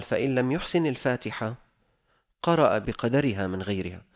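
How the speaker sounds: normal talking voice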